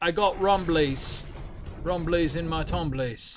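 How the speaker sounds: very slow, drawn-out, drawling Cockney accent. Reacting to the ground rumbling in a game: Winnie the Pooh in a Cockney accent. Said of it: "why did I combine Winnie the Pooh with a Cockney accent".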